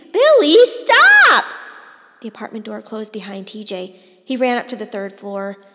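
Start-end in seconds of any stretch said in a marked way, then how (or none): 0.1-1.4 high, loud, shrill, terrified and frightened shriek. The mother cries out to her son Billy as TJ runs out: terrified screech. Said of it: "raised to a terrified screech".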